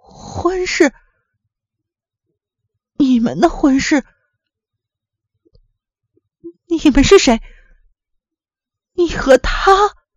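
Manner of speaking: trembling, shaky, high quavering voice. Just after a teacup crashes to the floor, he asks in a trembling voice. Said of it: "他颤声地问".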